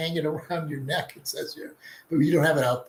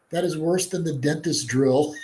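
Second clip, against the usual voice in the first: ordinary talk, nothing marked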